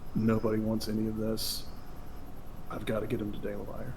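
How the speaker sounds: muttering under breath. Player speaking as their character, whispering to themselves. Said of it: "I just whisper to myself".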